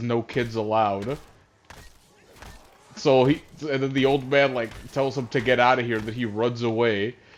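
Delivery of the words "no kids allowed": ordinary talk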